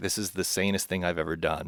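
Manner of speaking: normal talking voice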